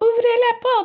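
very high, squeaky little mouse voice. Told to say a line like a mouse, speaker recalls how they did it: squeaky mouse voice. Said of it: "So I had like a squeaky voice".

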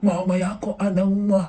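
ordinary talk, nothing marked

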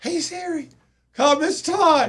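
put-on very high, shrill shouting. Retelling calling Siri after falling off the bike: imitating own yell. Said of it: "I'm yelling at the bike".

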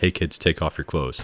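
soft, hushed whisper under the breath. Quoting a movie hero's aside to the camera: whispering like Aladdin. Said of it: "sounds like he whispers".

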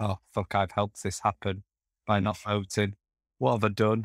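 ordinary talk

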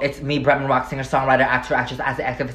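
rapid-fire, rattled off super fast. Self-introduction listing titles, said as fast as possible: rattled off very fast. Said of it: "I'm gonna say this as fast as possible".

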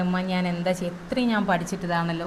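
ordinary talk, nothing marked

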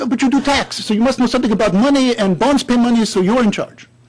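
put-on speaking with a Corsican accent. Retell his reply after you said you had no idea what a bond is, imitating his perfect Corsican accent. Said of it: "he said to me in his perfect Corsican accent".

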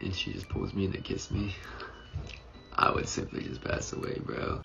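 creaky fry voice. Talking to a listener who tells him to stop, in vocal fry. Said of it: "Stop using vocal fry".

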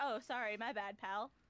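slow, mocking, insincere sarcastic tone. Describing what a game character says after a revive: imitating a sarcastic apology. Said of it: "But completely sarcastic".

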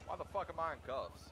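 hostile, confrontational. Waking up handcuffed while being treated for injuries, aggressive. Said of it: "why are you so aggressive?".

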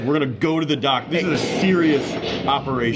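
ordinary talk

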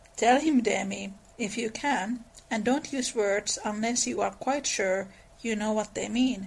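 ordinary delivery, nothing marked

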